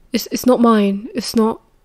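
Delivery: ordinary delivery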